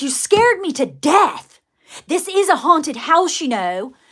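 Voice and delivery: put-on annoyed scolding. Retelling what a lady on the porch said: imitating someone almost mad. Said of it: "almost mad at me".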